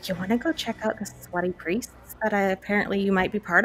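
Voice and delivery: hushed voice. In character, inviting Ava to go look around: whispering. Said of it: "I'm gonna whisper".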